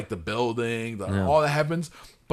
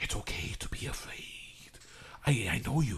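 put-on whispering movie voice, lower and quieter; 3 semitones lower, 11 dB quieter than usual. Mocking a film trailer line: Robert Downey Junior whisper acting. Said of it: "Robert Downey Junior's whisper acting".

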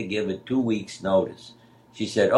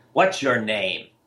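rough, very gruff, blunt. Retelling going up to someone at the hospital: imitating a gruff question. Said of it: "very gruffly say".

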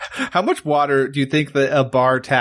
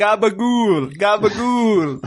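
goblin voice shouting, much higher; 7 semitones higher than usual. Describing the creatures climbing below, he voices a goblin shouting. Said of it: "He's just shouting".

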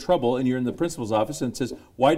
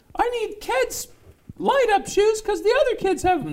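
put-on very high-pitched little-kid voice. Acting out what a kid would say to his dad, in a Mickey Mouse-like kid voice. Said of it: "Why do you sound like Mickey Mouse?".

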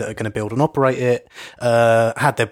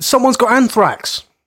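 eager, excited, very high-pitched and loud voice; 13 semitones higher, 6 dB louder than usual. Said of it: "don't say it so excitedly".

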